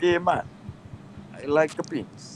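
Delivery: bad, weak fake Russian accent in a whisper. Joking about Russian hackers in the call, bad fake Russian accent. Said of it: "That was not even a Russian accent".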